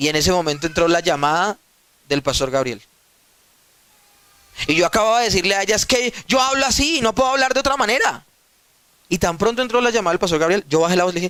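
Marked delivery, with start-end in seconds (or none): 5.7-8.2 high-pitched, heated yelling. Retelling a fight with his wife: imitating own past shouting. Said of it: "el que estaba gritando era yo".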